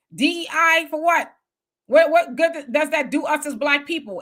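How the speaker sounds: ordinary talk, nothing marked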